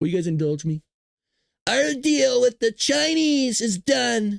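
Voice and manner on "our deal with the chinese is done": slow, drawn-out, rough, pitched-up voice. Quoting a statement of Trump's to the listeners: Trump voice. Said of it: "Should I try it in the Trump voice?".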